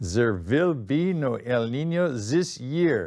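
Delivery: put-on thick, laid-on, very heavy German accent. Quoting a german scientist's el nino forecast punchline, in a very heavy german accent. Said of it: "very heavy German accent".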